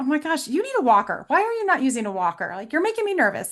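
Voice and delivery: playful, teasing, animated, swooping concern. The speaker quotes their younger daughter teasing a wobbly man, retelling a joking remark. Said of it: "she can ha- say it in a sort of joking way".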